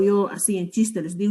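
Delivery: normal talking voice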